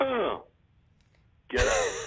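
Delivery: put-on dismissive grunt. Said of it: "my impression of a perfect date".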